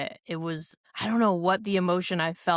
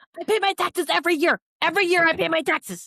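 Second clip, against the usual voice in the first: very high, loud, insistent declaring voice; 12 semitones higher, 5 dB louder than usual. Doing an impression another speaker asked for: impression of a reality star. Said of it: "Can I do an impression?".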